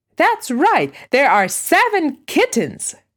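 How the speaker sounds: loud, joyful, excited, high exclamation. Benji answers Ray's question about the kittens, loud and joyful. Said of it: "repeated Benji loudly and joyfully".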